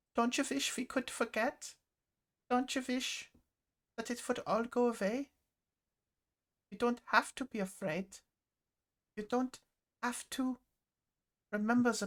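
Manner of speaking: put-on very young-sounding, high-pitched German accent. Quoting what a teary-eyed woman says, young Lieutenant Commander Stern German accent. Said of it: "in a very young Lieutenant Commander Stern German accent".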